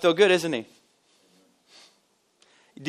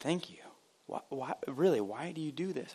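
much softer, changed way of speaking. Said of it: "even the way that she spoke changed".

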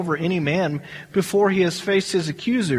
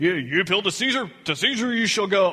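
mock commanding, official-sounding, put-on authoritative voice. Quoting his declaration after conferring with his council, in a mock-authoritative voice. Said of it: "he gets that authoritative voice".

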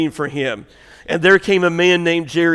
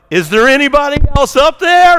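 very high, rising yelled call; 10 semitones higher, 7 dB louder than usual. Telling a story at church, voicing the man below: retelling a yell upward. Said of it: "the man yells back up".

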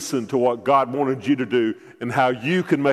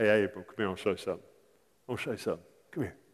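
very soft, low, hushed, cool, easygoing drawl; 4 semitones lower, 11 dB quieter than usual. Retelling a Bible story, voicing God calling April over, in a cool, casual God voice. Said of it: "in the most cool way he could have said it".

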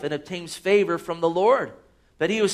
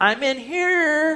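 put-on tiny, very high, drawn-out child's voice; 10 semitones higher than usual. Speaker retells the reply heard after offering candy: imitating a little voice. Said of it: "I'd hear a little voice return".

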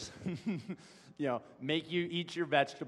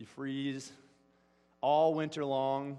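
ordinary talk, nothing marked

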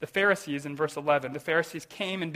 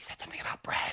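soft, hushed whisper. Acting out a disciple in the boat whispering back an answer: whispering. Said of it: "Someone whispers back".

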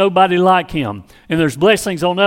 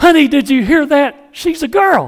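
put-on, overjoyed, gushing, exuberant, pitched-up voice; 8 semitones higher, 3 dB louder than usual. Recalling the moment a baby girl is born, retelling an exuberant exclamation. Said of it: "And I said real exuberantly".

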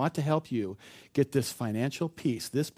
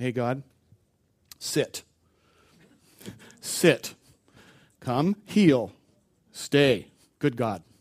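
mock loud, drawn-out delivery; 6 dB louder than usual. Acting out how people pray, like commanding a dog: mocking tone. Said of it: "I was just mocking that".

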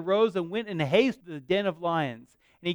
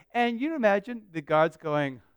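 ordinary talk, nothing marked

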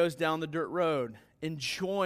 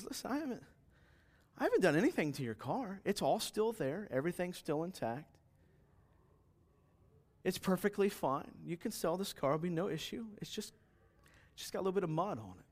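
very calm, soft, unruffled, even-tempered voice; 2 semitones higher, 8 dB quieter than usual. In a story, the guy answers the upset dealership man, retelling a very calm reply. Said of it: "very calmly".

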